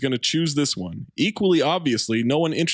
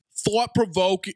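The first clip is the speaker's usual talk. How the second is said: unconvincing put-on Boston accent, higher pitch; 5 semitones higher than usual. Reading a short review quote aloud after being asked for a Boston accent. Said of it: "Boston accent, please".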